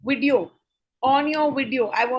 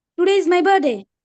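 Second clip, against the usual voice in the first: rapid, excited, fast-paced delivery; 5 semitones higher, 7 dB louder than usual. In a class exercise on pace, an example sentence is given at a fast excited pace. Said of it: "fast pace में give me one example".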